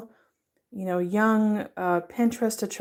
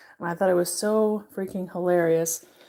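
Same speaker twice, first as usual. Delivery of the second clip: ordinary talk, nothing marked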